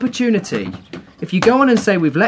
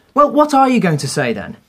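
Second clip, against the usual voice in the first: ordinary delivery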